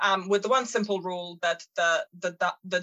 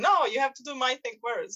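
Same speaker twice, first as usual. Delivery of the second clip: high-pitched, put-on, pushy screaming; 6 semitones higher than usual. Explaining a man's behavior, the speaker acts out someone screaming at him. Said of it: "someone would be screaming at him".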